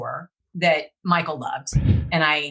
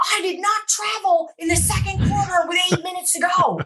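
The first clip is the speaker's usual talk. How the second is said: mock screaming, shrill and very high; 13 semitones higher than usual. Retelling a teammate running up on a plane: imitating someone screaming. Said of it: "So why are you screaming at me?".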